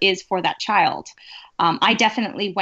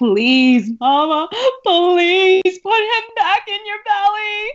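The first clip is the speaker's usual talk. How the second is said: put-on sobbing child scream, higher and louder; 11 semitones higher, 5 dB louder than usual. Retelling a young child screaming at mama: imitating a child screaming and sobbing. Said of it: "sobbing when I would hold Leo or Leo needed something and just screaming".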